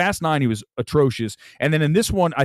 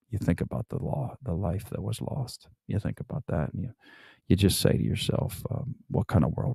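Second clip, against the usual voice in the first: put-on Southern lawyer accent, lower and quieter; 8 semitones lower, 9 dB quieter than usual. Redoing an acting class courtroom monologue in a Matthew McConaughey accent. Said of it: "I did the whole Matthew McConaughey accent".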